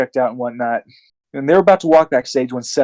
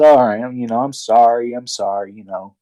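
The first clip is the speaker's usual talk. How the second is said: mocking, put-on grudging, half-hearted tone. Retelling a wrestler's apology after getting caught: imitating a half-hearted apology. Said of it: "his half-assed apology".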